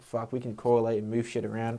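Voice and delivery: ordinary talk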